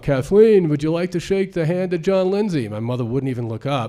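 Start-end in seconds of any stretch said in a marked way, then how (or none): 0.0-2.7 mock yell, loud and high, with New York accent. Retelling how dad yelled a question across the house to mom, acting out the yell. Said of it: "yells to my mom".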